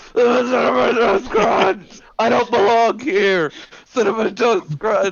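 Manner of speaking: frantic, desperate, very high-pitched wailing scream. Acting out a jailed person shaking the bars: desperate screaming inmate. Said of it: "shaking the bars as the new inmates come in".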